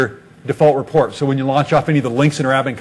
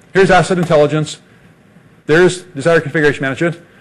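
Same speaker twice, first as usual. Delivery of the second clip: very fast, rapid-fire patter, played for laughs; 2 semitones higher than usual. Rushing through list items on purpose for a joke: joking rapid talking. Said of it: "I gotta talk really fast now".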